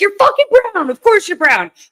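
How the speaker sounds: shrill, high, fast, furious angry yell. Recounting shouting at other drivers from the car, retelling a yell. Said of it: "And I'm yelling this".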